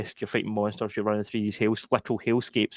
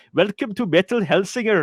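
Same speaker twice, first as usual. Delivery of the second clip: very high, loud, put-on Swedish accent; 10 semitones higher, 6 dB louder than usual. Act out the guy in the game's trailer welcoming viewers, with a put-on Swedish accent. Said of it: "because they're like Swedish or whatever".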